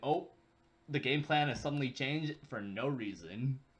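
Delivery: ordinary talk, nothing marked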